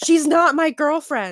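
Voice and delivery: play-acted all-out scream at full volume. Retelling a scene where Zuko denies she's his girlfriend: imitating Zuko screaming. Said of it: "So then Zuko screams".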